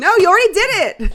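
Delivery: very loud, very high-pitched shouting. Reacting to someone choking on a peanut, shouting. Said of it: "Oh my God, I'm shouting".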